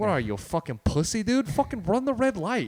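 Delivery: very high-pitched, worked-up, comic ranting tirade. Imagining a narrator in the head after a yellow light: Bill Burr's ranty voice. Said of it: "Bill Burr's, like, ranty ass voice".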